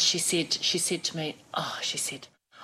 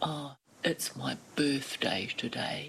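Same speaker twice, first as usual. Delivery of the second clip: soft, mopey, gloomy voice; 4 semitones lower, 5 dB quieter than usual. Retelling what the woman about to wash her hair said, Eeyore-like voice. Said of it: "in the most Eeyore-like voice".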